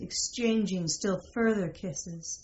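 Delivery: ordinary delivery, nothing marked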